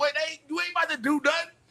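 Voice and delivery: very high cartoon talking-dog voice. Retelling how the dog looked at the speaker: voicing his dog Marley. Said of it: "he'd look at me like".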